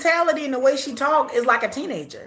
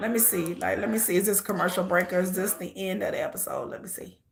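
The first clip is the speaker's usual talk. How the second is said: plain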